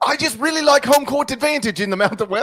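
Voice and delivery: very high fake Australian accent slipping into English accent. Co-host repeating a game pick, in an Australian accent drifting to English. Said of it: "floating over to uh, England with that one".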